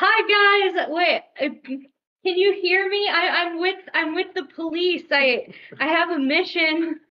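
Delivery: loud, high-pitched yelling in a character voice. Greeting people in a boat below, in character: yelling in character. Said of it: "I yell".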